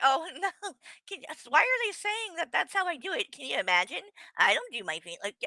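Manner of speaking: sarcastic stumbling tone. Mocking the other speaker's denial by imitating them: mocking imitation of the other speaker. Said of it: "you're trying to act like".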